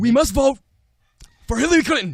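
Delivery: airy, breathy voice, very loud, high and belted. Told the voice has airiness, the speaker tries another line: airy Bernie Sanders impression. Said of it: "a little bit of like airiness in the voice".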